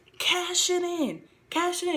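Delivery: play-acted high, drawn-out scream at top of lungs. Retelling a match where she demands the ref act: imitating Carmella screaming. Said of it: "She's screaming at the top of her lungs".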